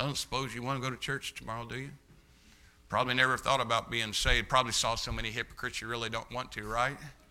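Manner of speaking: low, dull, flat, unvaried monotone drone. Speaker showing a poor way to invite someone to church: flat monotone. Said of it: "I'll walk up in a monotone thing".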